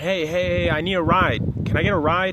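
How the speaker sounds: acted-out, easygoing, slow, relaxed hollering voice. Telling an analogy about a roadside stranger needing a ride: imitating someone hollering. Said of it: "They start hollering".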